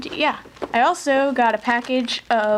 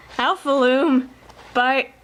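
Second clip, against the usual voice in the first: voice breaking and cracking mid-phrase. Introducing a loom kit before opening it, voice cracking. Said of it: "that was a voice crack".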